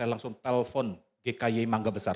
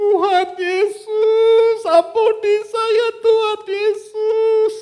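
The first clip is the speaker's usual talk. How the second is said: acted very high, very loud, very slow tearful wailing; 14 dB louder than usual. Retelling a mother's cry during a prayer: imitating a crying plea. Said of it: "Sambil menangis mama".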